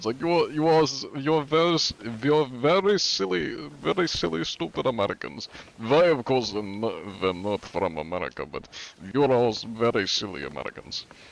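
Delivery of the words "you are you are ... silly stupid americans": high-pitched, clumsy fake German accent. Recalling going around insulting people in a game: bad German accent. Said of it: "It wasn't a good German accent".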